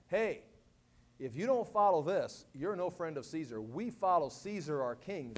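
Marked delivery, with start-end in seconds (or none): none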